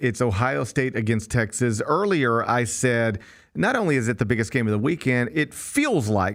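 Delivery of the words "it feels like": feels stressed, slow and drawn out. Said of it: "I emphasize the word feel".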